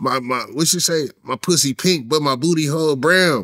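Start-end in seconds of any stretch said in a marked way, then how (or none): none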